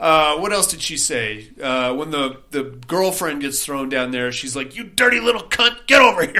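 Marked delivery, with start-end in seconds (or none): 4.8-6.4 high-pitched, possessed, demonic voice. Retelling what the possessed character says to the girlfriend: imitating Mia's demon voice. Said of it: "when the demon voice comes out of her".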